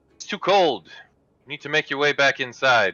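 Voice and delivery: loud hollering, calling out. Voicing a woman calling children back indoors from the snow: hollering at children. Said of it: "hollers at them and says".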